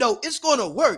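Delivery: put-on self-assured, unbothered, confident insistence. Retelling a fellow speaker's reply about the PowerPoint: imitating Billy's confident reply.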